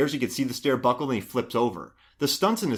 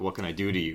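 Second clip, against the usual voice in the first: put-on sexy voice, lower and quieter; 6 semitones lower, 7 dB quieter than usual. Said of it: "Sexy voice".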